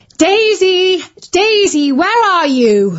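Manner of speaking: high, loud calling shout. A mother runs into the room looking for her daughter, shouting. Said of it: "Shouted Mum".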